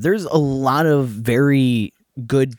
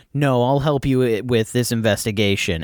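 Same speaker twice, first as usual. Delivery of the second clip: plain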